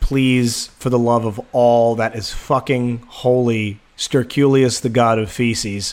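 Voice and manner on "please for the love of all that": ordinary delivery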